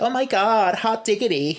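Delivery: bad put-on American accent, high pitch, slow. Retelling a scene where a character fakes an accent: Gwen's bad American accent. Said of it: "And Gwen's American accent".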